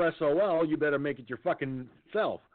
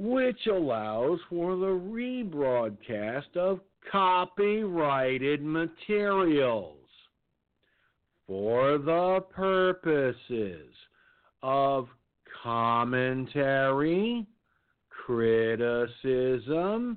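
very slow, deliberate, spelled-out reading. Addressing YouTube and CNN directly so they get it, speaking slowly. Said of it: "I'm going to say it's slow".

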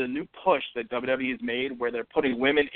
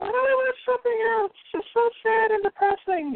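put-on woman's voice, pitched very high. Repeating what Maggie asks him about what he watches, in Maggie's voice. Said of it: "I would do Maggie's voice".

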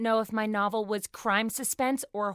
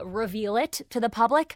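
usual speaking voice

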